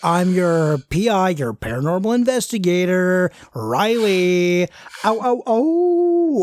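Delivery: gross, laid-back surfer-dude drawl. A ghost-hunting show host introduces himself to viewers as their paranormal investigator, in a gross surfer-dude voice. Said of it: "Like, I kind of like the gross surfer dude kind of guy. / There is two gentlemen who are a little rowdy, / Like, I kind of like the gross surfer dude kind of guy. / "Okay, whatever you say, man. Like".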